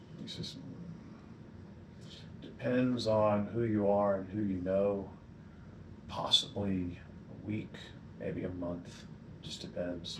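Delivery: quiet, flat, droning monotone throughout. A game character answering a player's question about the Deathless, monotone. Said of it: "the whole time he's just kind of monotone".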